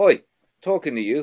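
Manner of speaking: put-on British accent. Showing how a robot should talk while following people, British accent. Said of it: "teach it to talk in a British accent".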